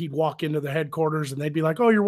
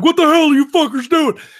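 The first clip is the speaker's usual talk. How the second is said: very high, very loud drill-sergeant scream; 12 semitones higher, 10 dB louder than usual. You are retelling how you scared people who thought you were really him, in a Technical Sergeant Ramscock voice. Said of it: "go do the voice".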